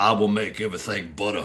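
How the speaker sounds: put-on low voice with South Carolina accent. Speaker does the voice of a South Carolina governor, Governor McMaster impression. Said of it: "I'm doing this in the voice of uh, Governor Mark McMasters from South Carolina".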